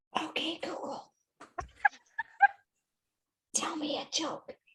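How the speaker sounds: soft, barely voiced whisper. Testing whether a phone assistant whispers back, whispering. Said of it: "I want to whisper to my phone".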